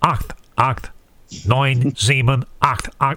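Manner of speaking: put-on nasal, nose-pinched woman's voice. Recalling a woman's voice reading numbers, heard as a kid: pinched-nose nasal woman's voice. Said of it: "a woman's voice, as if she'd pinched her nose".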